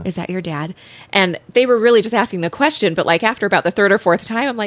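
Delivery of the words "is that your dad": put-on child whisper, quieter. Retelling classmates asking about a visiting dad: imitating kids whispering. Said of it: "all these kids were just whispering".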